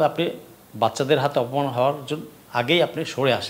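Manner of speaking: usual speaking voice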